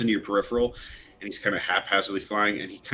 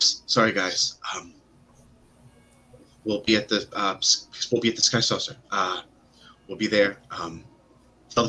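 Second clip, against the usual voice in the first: mock panic, flustered, panicky babbling. The assistant, arms full, calls after her as she walks away, panicking. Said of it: "he starts panicking".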